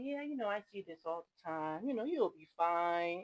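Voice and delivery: soft, compassionate, reassuring tone. Retelling how a sweet doctor reassured you around a biopsy, imitating Doctor Goodwin's soft, compassionate voice. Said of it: "has this little soft, compassionate voice".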